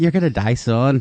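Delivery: ordinary talk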